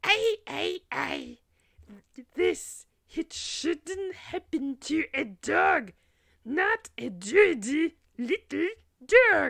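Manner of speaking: very high, loud, slow, hoarse, sad drawn-out lament. Two Venusians weep over the Earthlings' bodies; one speaks to the other, high-pitched, hoarse, sad voice. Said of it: "in a high-pitched, hoarse, sad voice said".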